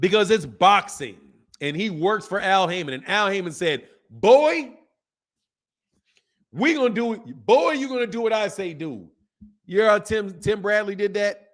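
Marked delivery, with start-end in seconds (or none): 4.1-9.1 condescending, superior big-boss voice. Retelling what a boxer's boss told him: Colonel Sanders-style voice. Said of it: "Like literally use that tone on Al Heyman".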